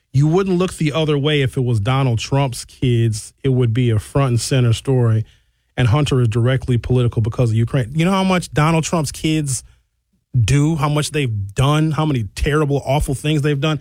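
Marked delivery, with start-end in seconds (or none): none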